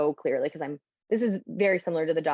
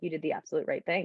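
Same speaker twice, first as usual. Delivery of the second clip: normal talking voice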